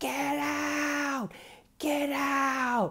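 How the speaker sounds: very high, very slow, drawn-out screech. Retelling how a son suddenly exploded at his mother: imitating someone screaming. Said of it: "he keeps screaming".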